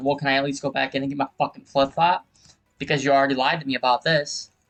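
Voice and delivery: reenacted heated, angry tone. Retelling an argument about a flip-flop, reenacting own heated words. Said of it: "I'm getting a little heated".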